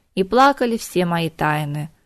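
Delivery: ordinary delivery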